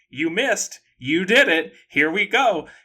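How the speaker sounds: acted-out loud screaming outburst. Retelling a movie scene where the heron squares up: imitating the heron screaming. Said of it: "just starts screaming".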